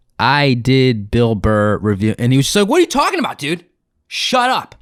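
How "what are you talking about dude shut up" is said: very high-pitched, angry, mad retort. Retelling a comedian's reaction to the speaker's claim, retelling an angry retort. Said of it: "He got so mad".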